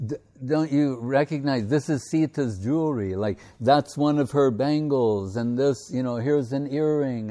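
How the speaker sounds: ordinary talk, nothing marked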